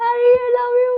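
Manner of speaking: very high, star-struck, excited fan squeal. Recounting a fan moment, calling out to him: retelling an excited scream. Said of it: "I scream".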